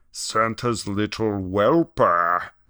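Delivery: snarling voice. The ginger speaks to Robinson, who is down in the snow: snarling. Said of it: "snarled the ginger".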